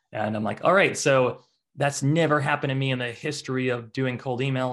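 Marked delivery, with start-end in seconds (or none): none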